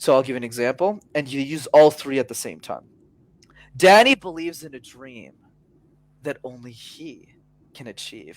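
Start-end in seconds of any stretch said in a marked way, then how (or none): 3.8-8.4 slow roller-coaster intonation, rising and falling. Giving an audience an example of vocal variety: pitch swinging high and low. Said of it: "notice I'm going high, low, high, low, high, low".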